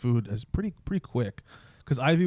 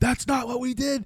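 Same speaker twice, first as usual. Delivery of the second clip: put-on angry scream, pitched higher; 12 semitones higher than usual. Imagining Megan screaming at the radio during this episode: imitating Megan screaming. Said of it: "screaming at the radio".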